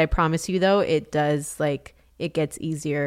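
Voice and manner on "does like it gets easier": ordinary talk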